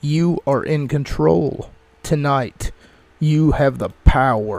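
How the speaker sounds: robotic, machine-like voice. Describing the message that opens the show: robotic voice. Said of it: "it's kind of a robotic voice that's speaking".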